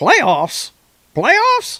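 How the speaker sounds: very high, loud ranting voice with big pitch swoops. Reading out what Keely Chow says, echoing a classic clip, in a Jim Mora voice. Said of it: "in my Jim Mora voice".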